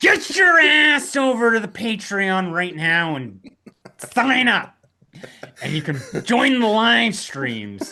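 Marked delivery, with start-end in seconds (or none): 0.0-4.7 high-pitched, sinister, wicked doll voice. Host addressing the audience, in a Chucky voice. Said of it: "but I can say it as Chucky".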